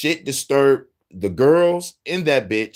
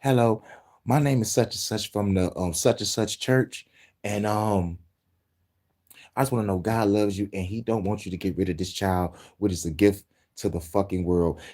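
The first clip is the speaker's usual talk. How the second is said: soft, quiet, low-key preaching tone; 5 semitones lower, 6 dB quieter than usual. Acting out a scenario where a man approaches women in a clinic: imitating quiet preaching. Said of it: "quietly preaching to individuals".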